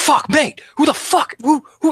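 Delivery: very high, drawn-out, alarmed, startled swearing. Voicing a character just hit with a shovel, startled cursing. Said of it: "You hear her start like".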